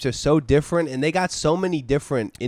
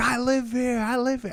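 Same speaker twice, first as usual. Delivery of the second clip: put-on yelling, high and raised; 9 semitones higher than usual. Retelling a man yelling through the door: imitating someone yelling. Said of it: "he's yelling in Spanish at us through the door".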